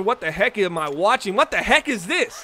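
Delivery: normal talking voice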